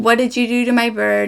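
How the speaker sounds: acted-out alarmed, accusing, freaked-out, panicked outburst. Retelling finding a bird on the floor: retelling own freaked-out outburst. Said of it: "I'm freaking out".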